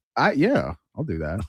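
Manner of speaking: sarcastic, insincere tone. Answering a suggestion to buy a copy of the other's book: sarcastic. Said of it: "He says sarcastic".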